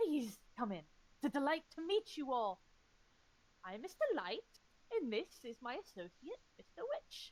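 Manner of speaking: flamboyant, theatrical elf voice. Voicing an elf welcoming the party into a classroom: flamboyant elf voice. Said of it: "a flamboyant elf grins from ears to ear as he welcomes you".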